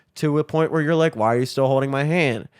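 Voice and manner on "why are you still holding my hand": normal talking voice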